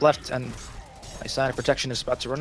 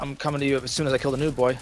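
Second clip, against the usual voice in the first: usual speaking voice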